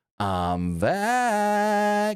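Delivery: all-in swooping sing-song, "back" drawn out. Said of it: "fully just right into the hard cam".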